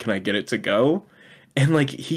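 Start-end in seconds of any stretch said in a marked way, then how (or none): 0.0-1.0 smug, cheeky, cocky, self-assured tone. Retelling a film scene, a character's cocky request: imitating a cocky tone. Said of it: "this clear moment of her being cocky".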